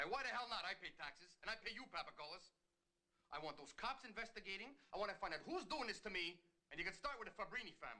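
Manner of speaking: terribly fake Italian accent. Playing a paranoid mafia guy in a scene, in a terribly fake italian accent. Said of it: "That is the worst Italian".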